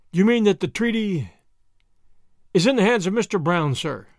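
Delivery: ordinary delivery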